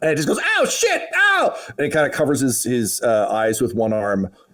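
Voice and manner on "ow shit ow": very high goblin yelps and screams of pain. Narrating a goblin who looks up into the sunlight: goblin screaming in pain. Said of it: "a scream of pain".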